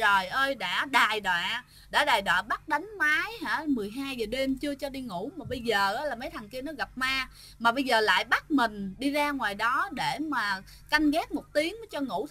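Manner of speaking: ordinary talk, nothing marked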